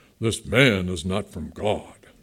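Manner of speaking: voice dropped low, pompous. Reading the Bible passage aloud, voicing the Pharisees, in a Pharisee voice. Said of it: "here's my Pharisee voice".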